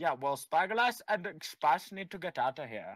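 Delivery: put-on bad Indian accent. Gamer repeating another player's line during a match, in a bad indian accent. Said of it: "That is the worst Indian accent I've ever heard".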